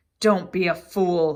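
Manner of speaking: snarled, snarling. Narrator reads the face's threat to Harry, snarling. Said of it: "he snar snarled the face".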